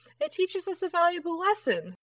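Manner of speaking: high, loud, playful ghost or sprite voice.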